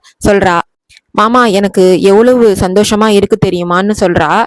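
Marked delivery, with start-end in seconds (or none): none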